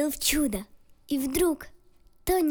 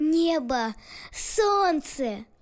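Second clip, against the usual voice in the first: glad, joyful exclamation, "Небо" drawn out; 2 semitones higher than usual. A boy answers the captain's question, loud and joyful. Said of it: "громко, радостно произнес".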